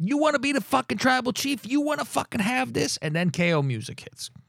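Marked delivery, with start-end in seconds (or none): 0.0-3.0 put-on, high, full-throated, all-out screaming. Retelling a scene before the music hits: imitating someone screaming.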